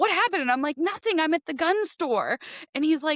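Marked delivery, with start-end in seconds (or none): 0.8-2.4 hysterical, crying, sobbing through the words. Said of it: "Why are you calling me in hysterics?".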